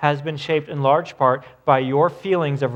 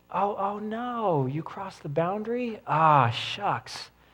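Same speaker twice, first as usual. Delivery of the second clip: mock soft, gently surprised, sympathetic parent voice; 5 semitones higher, 7 dB quieter than usual. Retelling how a parent responded when the children crossed a boundary, mock-empathetic. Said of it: "he would practice empathy right out of the gate".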